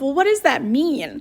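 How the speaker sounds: normal talking voice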